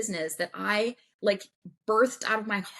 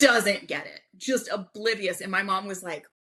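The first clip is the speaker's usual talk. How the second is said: ordinary talk, nothing marked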